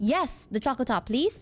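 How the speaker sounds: ordinary talk, nothing marked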